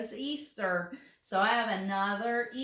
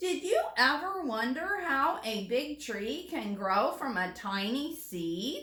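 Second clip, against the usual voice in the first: rising, curious, genuinely inquiring tone; 3 semitones higher than usual. Speaker reads aloud a sentence ending in a question mark, reading as a question. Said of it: "read it like we're asking a question".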